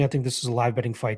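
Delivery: plain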